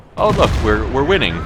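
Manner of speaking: naive gloating, crowed out high and loud.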